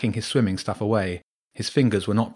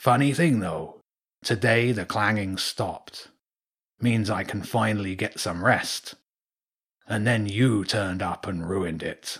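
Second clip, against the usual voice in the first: put-on big old seabird character voice. Bedtime story narrator voices an old cormorant on a pier: old cormorant character voice. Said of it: "On top of the corner post was a large bird, a cormorant twice the size as the one he'd spoken to on the beach. / The old bird paused and slowly turned its beak downward to point at James. / Bedtime St".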